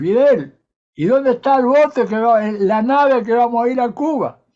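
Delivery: put-on very loud, high, classic rioplatense Argentine accent. Retelling an anecdote, quoting a voice heard on the boat: classic Argentine accent. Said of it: "un clásico acento argentino o rioplatense".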